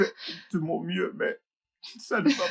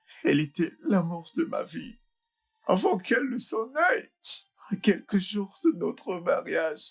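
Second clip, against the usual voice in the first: high, tearful speech, talking through tears; 8 semitones higher than usual. Speaker confides in his brother, crying while talking. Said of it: "arrête de pleurer".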